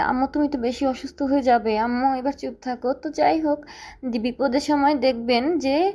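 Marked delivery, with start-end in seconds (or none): none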